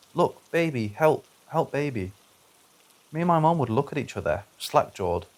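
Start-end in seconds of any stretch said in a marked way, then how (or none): 0.2-2.1 put-on small, slow little toddler voice. Retelling how a three-year-old sister pointed at the walls, in a toddler voice. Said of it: "in a toddler voice".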